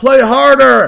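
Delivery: rough, hoarse, shrill, high, very loud holler. Parent retelling what he yells at his kids' soccer games, retelling a sideline yell. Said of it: "If I yell".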